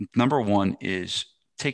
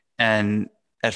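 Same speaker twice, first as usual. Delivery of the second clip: usual speaking voice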